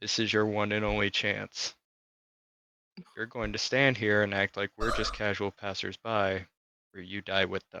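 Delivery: barely audible, very quiet, menacing half-whisper. In a tabletop game, a player's character steps close to a man: half-whispered threat. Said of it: "I just whisper in his ear".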